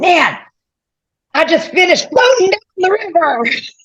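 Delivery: gravelly, raspy voice pitched very high. Quoting what a man said when he called, imitating a gravelly voice. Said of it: "He's got this grovelly voice".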